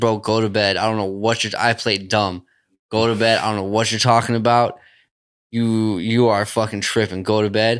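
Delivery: plain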